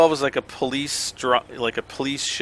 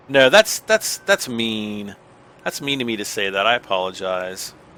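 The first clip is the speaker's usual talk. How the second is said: ordinary talk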